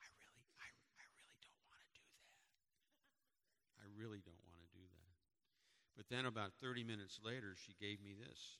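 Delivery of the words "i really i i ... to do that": very quiet, barely voiced whisper. Retelling how Lily said she didn't want to pray aloud: imitating Lily's whisper. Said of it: "she kinda whispered".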